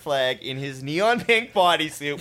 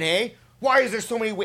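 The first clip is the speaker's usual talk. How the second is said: acted-out wild, high, frantic psycho scream; 7 semitones higher than usual. Retelling a barefoot skier's panic on a calm lake: imitating someone screaming. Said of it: "He starts screaming".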